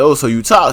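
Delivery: ordinary delivery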